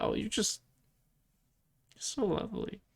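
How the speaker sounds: mock whispered, hushed, breathy, bashful, starstruck fangirl gushing. Voicing a bashful character meeting a guest: bashful, like a fangirl. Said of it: "bashful, almost like a fangirl kind of thing".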